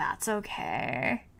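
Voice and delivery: breathy, creaky vocal fry. Repeating own words to show the creak in them: imitating own creaky voice. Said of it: "I sounded like a total millennial just then".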